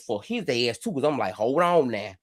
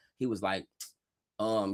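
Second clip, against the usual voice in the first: normal talking voice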